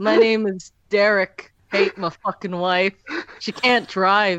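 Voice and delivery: put-on shambling zombie voice. Joking with others after a bit, doing a zombie impression. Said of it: "That's what my zombie impression sounds like".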